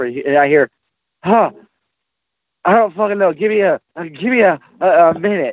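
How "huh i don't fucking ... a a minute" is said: play-acted breathless, panting, winded, pitched-up voice. Retelling an answer from behind a locked door: imitating someone panting for breath. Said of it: "he's fucking panting for breath".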